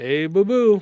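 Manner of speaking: high, loud, hollered cartoon bear voice. Watching NQ push higher, slipping into a Yogi Bear voice. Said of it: "I don't know why I'm doing Yogi Bear".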